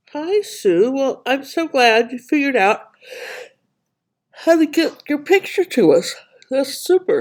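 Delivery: yawning while talking. Greeting Sue after her picture comes through, yawning. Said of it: "Sorry if I'm yawning".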